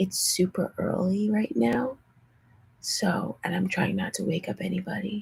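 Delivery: hushed, very soft whisper. Speaker addressing viewers very early, trying not to wake anybody: whispering. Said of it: "So that's why I'm whispering".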